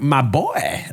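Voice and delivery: soft, hushed, strangely mournful delivery. Retelling how Shakespeare said a line in a movie: imitating Shakespeare's weird sad "my boy". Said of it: "The way he said it was kinda like".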